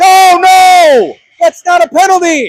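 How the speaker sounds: very high, very loud, shrill yell. Calling a game on the mic, reacting to a play, yelling. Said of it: "Sorry for yelling on the mic".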